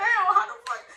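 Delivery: high, loud, put-on flustered panicked outburst. Retelling a late-night call for directions, a speaker acts out their past self, retelling a panicked outburst. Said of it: "it's panic mode".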